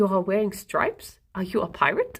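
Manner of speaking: put-on German accent. Copying an online impression of a German mum: imitating a German mum impression. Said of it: "doing the impression of the German mum".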